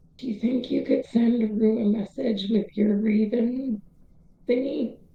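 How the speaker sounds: whispering in a character voice. Voicing a character leaning toward a companion: whispering in character. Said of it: "lean in the direction he thinks Hugh is and whisper".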